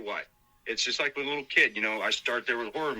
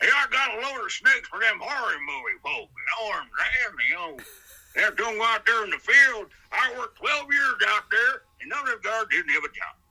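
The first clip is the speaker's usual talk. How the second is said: very high, loud, ad-libbed hillbilly character voice; 10 semitones higher, 5 dB louder than usual. Showing how to ad-lib a voice impression, run off the head in a Jim Varney hillbilly voice. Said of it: "a little hillbilly voice?".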